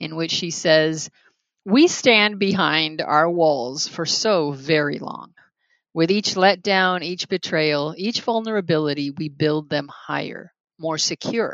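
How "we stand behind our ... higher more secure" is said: normal talking voice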